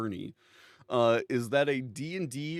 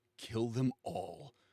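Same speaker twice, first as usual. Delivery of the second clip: put-on very serious, grave tone, quieter; 7 dB quieter than usual. Retelling a party member's line before a boss fight: imitating a very serious tone. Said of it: "just gets real serious and just goes".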